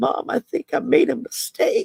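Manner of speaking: put-on high, tearful little-boy voice on the verge of tears. A mother retells her son's first phone call, imitating his tearful little-boy voice. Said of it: "this little boy voice that was on the verge of just you could hear the tears".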